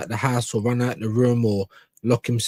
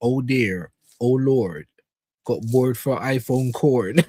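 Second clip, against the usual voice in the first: imitated Bristol accent. Repeating a heard line, imitating a Bristol accent. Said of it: "The accent is sick".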